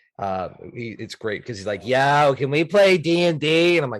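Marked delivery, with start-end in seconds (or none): 1.9-3.8 put-on thick Boston accent, much higher, louder. Describing a player from Boston asking to play D&D, hardcore Boston accent. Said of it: "he's got that hardcore Boston accent".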